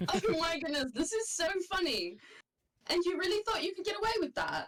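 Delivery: words broken by laughter. Narrating a story, voicing Sumi's reply to a thousand-gold offer, laughing while talking. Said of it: "Sumi starts laughing".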